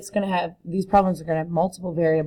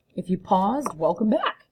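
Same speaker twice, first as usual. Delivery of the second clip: voice breaking mid-line on a word; 2 semitones higher, 3 dB quieter than usual. Welcoming viewers back after they paused the video: voice cracking. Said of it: "that voice crack".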